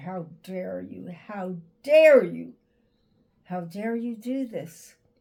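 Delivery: play-acted, loud, furious scream. Retelling what was screamed at god after a sudden loss: retelling screaming at god. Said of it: "I screamed at God".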